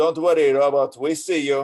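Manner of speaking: loud, dubious put-on French accent. Retelling a voice over the crackling VHF radio, in a French accent. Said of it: "this French voice goes ... I don't know how French that accent was".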